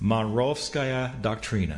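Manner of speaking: Russian word pronounced with an American accent. Saying a Russian term for listeners: American accent. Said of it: "I'll say it in an American accent".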